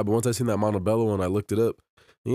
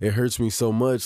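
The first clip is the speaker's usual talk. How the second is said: normal talking voice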